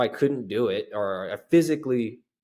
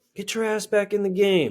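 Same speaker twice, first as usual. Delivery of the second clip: put-on shrill, very high yell; 10 semitones higher than usual. Retelling being called back into the game from the sideline: imitating mom yelling from sideline. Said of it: "Italian lady yelling at you from the".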